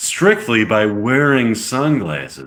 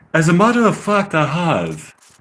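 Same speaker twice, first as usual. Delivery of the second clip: so-so, attempted put-on British accent, pitched up; 5 semitones higher than usual. Reading a script aloud, the speaker voices a role, not-great British accent. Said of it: "It's not the best British accent I've ever heard".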